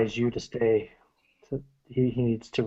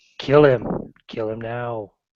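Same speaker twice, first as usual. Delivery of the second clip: demonic voice. Voicing a demon urging a killing: demonic inner voice. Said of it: "This is the voice from Andrew's demonic self".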